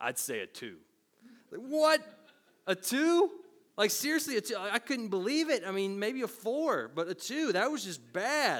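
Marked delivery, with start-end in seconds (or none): 0.0-0.8 low, expressionless, dead-serious deadpan. Retelling the boss's verdict on a self-rating of seven: imitating a deadpan delivery. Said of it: "He looked at me deadpan".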